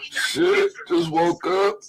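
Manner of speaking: speech broken by a fake, put-on yawn. On a phone call with a friend, fake yawning.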